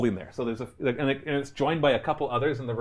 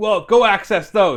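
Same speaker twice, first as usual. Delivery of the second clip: very loud, pitched-up PA announcer voice; 7 semitones higher, 11 dB louder than usual. Voicing a character heard over a PA system asking for help: Qualish's voice over a PA. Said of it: "it's this voice of Qualish".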